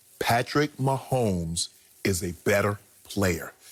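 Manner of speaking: very low, very slow, deliberate, every word enunciated. Speaker stressing his point to listeners, saying it really slow and enunciating. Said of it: "I'm gonna say it really slow".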